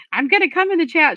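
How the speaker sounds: high, loud, mock threatening voice. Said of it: "She's threatening me".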